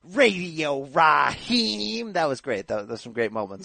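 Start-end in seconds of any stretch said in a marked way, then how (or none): 0.1-2.1 slow, drawn-out announcer-style call. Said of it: "the way that he said".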